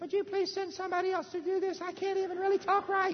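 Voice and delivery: high-pitched cartoon-style voice. Retelling Moses asking God to send someone else: Mickey Mouse voice. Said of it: "He was talk like Mickey Mouse".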